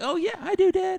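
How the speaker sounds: mock very high, loud, drawn-out eager kid's "yes". A dad retells his kid's answer to his question, imitating her excited reply. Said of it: "she's all excited".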